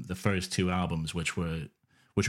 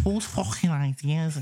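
terrible fake Scouse accent, much higher pitch; 10 semitones higher, 3 dB louder than usual. Imitating another speaker's accent while repeating a question, put-on scouse accent. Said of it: "They went Scouse".

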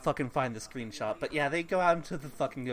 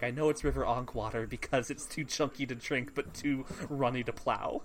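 ordinary talk

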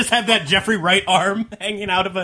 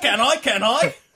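fake English accent, higher; 4 semitones higher than usual. Joking about suddenly sounding smart: put-on english accent. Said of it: "That's when you become really English".

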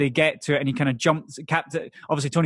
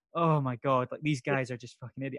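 put-on exhausted voice, quieter; 7 dB quieter than usual. Imitating a movie character stuck with a bunch of morons: exhausted Tony Stark impression. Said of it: "that kind of just exhausted".

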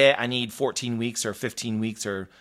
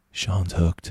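very soft put-on voice, lower pitched; 6 semitones lower than usual. Retelling what a coach said while walking away: imitating Justin's very soft voice. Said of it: "looked at me in his very soft voice".

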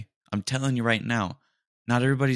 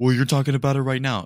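mocking nerdy dweeb voice; 4 semitones higher, 5 dB louder than usual. Ranting about people who talk about red flags, mocking a dweeb. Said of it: "one of those dweebs that is like".

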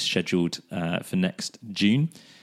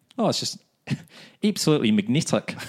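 put-on New Zealand accent with Kiwi vowels; 4 semitones higher than usual. Sharing a new favourite word, saying the quote in a New Zealand accent. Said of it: "my new favourite word in New Zealand accent".

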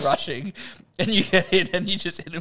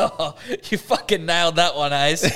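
put-on sarcastic old bloke voice. Picturing a missed darts throw at the pub, imitating a sarcastic old bloke at the bar. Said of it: "some old boy at the fucking, at the bar ... he just goes".

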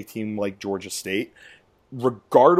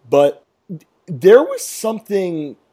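high, loud voice breaking mid-phrase; 7 semitones higher, 7 dB louder than usual. Podcast host talks wrestling with co-hosts and listeners; voice cracking. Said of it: "sorry about the voice cracking there".

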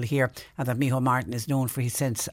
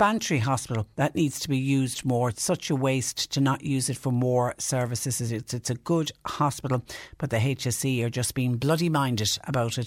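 normal talking voice

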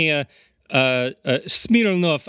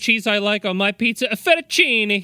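high, fast, fake Italian accent. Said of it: "you sound like an idiot".

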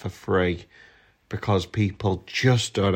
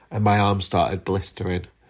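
ordinary delivery

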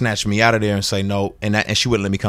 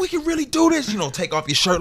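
mock, all-out screaming, very high-pitched; 3 dB quieter than usual. The speaker retells snapping in front of everybody before the principal came, retelling a scream. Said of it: "like screaming".

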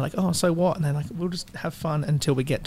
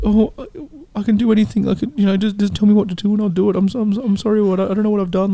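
put-on creepy voice, much higher, louder; 4 semitones higher, 7 dB louder than usual. Describing a movie scene to the other speakers, doing mock-creepy Patrick voice. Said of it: "That creepy voice where it's like".

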